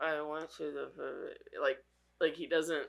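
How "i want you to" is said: put-on talk through barely parted lips, much quieter. Mocking how someone's brother never opens his mouth when talking, imitating talking without opening lips. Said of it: "He never really pulls his lips apart".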